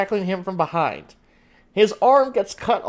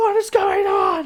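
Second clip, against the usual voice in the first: very high, drawn-out, bewildered yell; 12 semitones higher than usual. Voicing a character pinned to the ground by a dragon: yelling in confusion. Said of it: "pinned to the ground and yelling".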